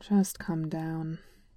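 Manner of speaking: sounding resigned. M'Baku tells the narrator, who is hiding in a tree, to come down; resigned. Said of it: "M'Baku said, resigned".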